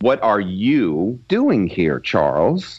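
excited voice with stress on 'you'. Demonstrating another way to read a script line, excited, stressing 'you'. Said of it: "very different than the kind of condemnatory".

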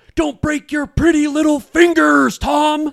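shrill, very loud, very high drill-sergeant scream. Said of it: "they yell".

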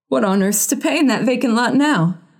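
trembling voice. George enters and speaks, trying to control his voice: shaking voice. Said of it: "he said in a shaking voice".

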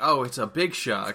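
ordinary delivery

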